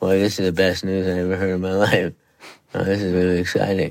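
very flat, lifeless deadpan monotone. Showing how Parkinson's affects the voice, very flat voice. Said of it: "Very flat".

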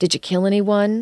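ordinary talk, nothing marked

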